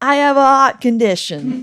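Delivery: put-on New York accent. Asking to hear the line in a New York accent, then trying it: attempted New York accent. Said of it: "in a New York accent?".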